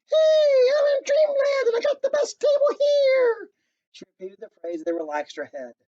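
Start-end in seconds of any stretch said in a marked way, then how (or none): 0.1-3.5 very high, loud, cartoonish voice. Narrator reading a story: a woman says what she heard, in a high, cartoonish voice. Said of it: "she spoke in a high, cartoonish voice".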